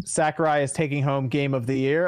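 ordinary talk

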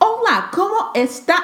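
put-on heavy, thick Midwestern accent, very high pitch. Mocking a girl speaking Spanish at the Cancun airport, imitating heavy Midwestern accent. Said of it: "her Midwestern accent was so heavy".

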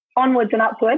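ordinary delivery

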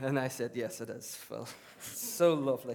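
ordinary talk

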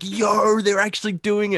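mock very high, thrilled, excited outburst. Retelling a friend's reaction to the news: imitating an excited friend. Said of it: "Davian was so excited. He's like".

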